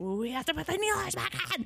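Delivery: put-on very high-pitched, fuming, climbing, super mad insistence. Retelling what she said during the exorcism: imitating someone super mad. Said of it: "super mad about it".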